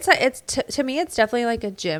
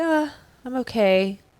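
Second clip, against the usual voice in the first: put-on, weird, gloomy, depressive down-in-the-dumps voice. Retelling a reply from someone met at the gym: imitating someone's depressive mood. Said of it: "in one of his depressive, weird moods".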